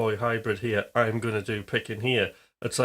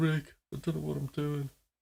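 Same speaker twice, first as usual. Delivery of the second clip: acted-out, tearful, crying weeping; 4 semitones higher, 6 dB quieter than usual. Retelling a plea to a guitar teacher: imitating own past crying. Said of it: "I was literally crying, going".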